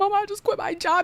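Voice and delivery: very high-pitched, blubbering boo-hoo sobbing. Retelling a call to mom from the car after quitting: retelling own crying. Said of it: "I'm literally boo-hoo crying".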